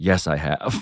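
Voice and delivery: put-on rueful, regretful, very low, soft murmur. Speaker acts out a man's answer in a retold scene, mock-rueful reply. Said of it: "he very ruefully says".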